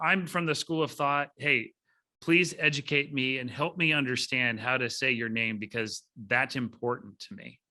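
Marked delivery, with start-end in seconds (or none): none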